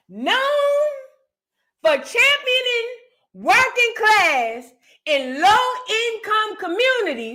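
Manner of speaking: deliberate word-by-word read-aloud. Rereading a news passage aloud for listeners: reading slowly. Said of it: "Now I'ma read this slow".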